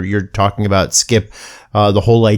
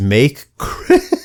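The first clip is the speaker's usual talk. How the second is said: laughing mid-word while speaking; 3 semitones higher than usual. Reading a billboard sign aloud, laughing while reading. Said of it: "I can't say it without laughing".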